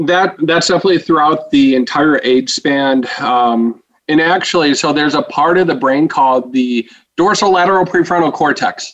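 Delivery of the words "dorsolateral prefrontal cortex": rattled off very fast, rapid-fire and rushed. Naming a long brain region on purpose: said really fast. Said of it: "I said that really fast on purpose".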